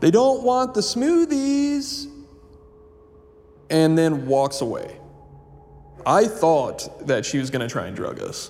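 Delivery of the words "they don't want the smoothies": mock, very high, condescending, talking-down shout. Retelling what a woman shouted around the corner of the room: retelling a condescending shout. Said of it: "shouts in a condescending tone".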